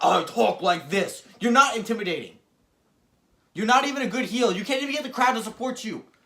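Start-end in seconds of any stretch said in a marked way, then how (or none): 0.0-1.2 very slow, dragged-out delivery of every word. Mocking a wrestler's way of talking: Drew McIntyre impression. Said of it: "and he talk".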